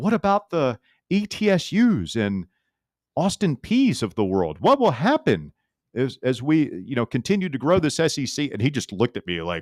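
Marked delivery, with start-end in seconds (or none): 0.0-8.5 most idealistic, earnest tone, swooping. Retelling asking the SEC commissioner a question, in a retold idealistic voice. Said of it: "I said in my most idealistic voice".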